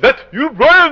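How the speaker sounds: put-on French accent, called out, high pitch. Recounting a stranger calling out to him, imitating a French accent. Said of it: "In his French accent".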